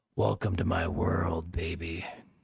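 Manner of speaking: whispering. Reading Earl's line as he breathes into the narrator's ear: whispering. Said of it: "He whispers into my ear".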